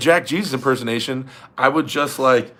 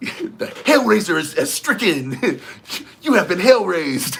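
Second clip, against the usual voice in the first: high, hyped-up, energetic voice; 5 semitones higher than usual. Doing an impression for a viewer's request: energetic Jeff Hale impression. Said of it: "Do a Jeff Hale impersonation before a match".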